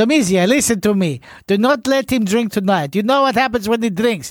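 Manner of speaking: put-on Italian-accented voice. Reading out a message from Pecco's sister in voice: Italian accent. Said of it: "You do better Italian accents than us".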